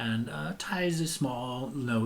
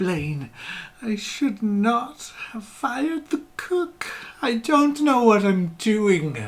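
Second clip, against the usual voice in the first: shrill, very high, very loud tearful blubbering; 11 semitones higher, 8 dB louder than usual. Voicing the mother character addressing the player, teary and blubbery. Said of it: "looks at you all teary eyed and blubbery".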